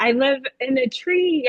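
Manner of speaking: ordinary talk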